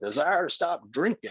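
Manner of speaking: high Texas drawl, bending the word drinking. Retelling what a man from Texas once said, in a Texas drawl. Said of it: "he was from Texas, so he had that drawl".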